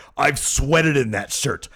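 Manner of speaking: loud, high-pitched, proud boastful tone. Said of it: "And he's like".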